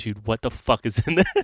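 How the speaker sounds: put-on angry, pissed-off outburst. Retelling breaking a tooth on food, acting out an angry outburst. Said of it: "I'm like legitimately pissed off".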